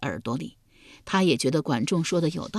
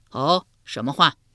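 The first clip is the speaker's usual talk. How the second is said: usual speaking voice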